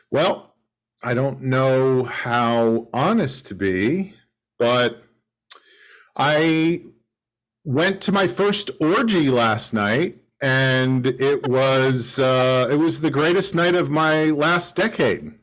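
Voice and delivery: ordinary talk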